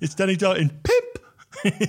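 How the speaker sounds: high, very slow, swooping voice, every word stretched. Imitating a critic talking about the film Pimp: high-pitched Mark Kermode impression. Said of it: "in, like, a high-pitched voice".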